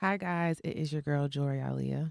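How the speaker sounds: soft, rough, raspy voice. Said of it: "rasp in your voice".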